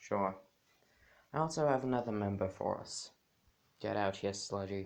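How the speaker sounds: deeply dejected, heavy-hearted, very depressed voice. Voicing Deku introducing a new member at the bar: very depressed voice. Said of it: "in a very depressed voice".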